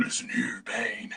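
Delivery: menacing, sinister, dark breathy whisper. Mocking how the hero's voice changes under the mask: sinister Batman voice. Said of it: "why do you sound like that?".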